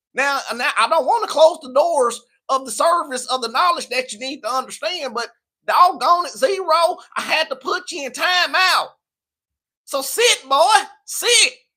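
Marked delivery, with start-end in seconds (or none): 1.1-11.5 very slow Southern country drawl, pitched up. Scolding someone who won't act right and sitting them down, in a country southern accent. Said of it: "Y'all made me bring my country out".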